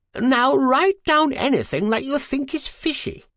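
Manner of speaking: shrill, very high-pitched witch character voice. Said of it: "Wicked Witch of All Things East".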